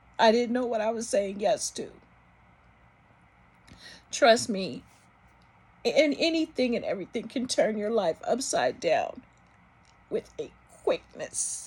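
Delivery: trying not to cry, holding back tears. Telling of eight years battling MS, trying not to cry. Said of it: "I'm trying not to cry".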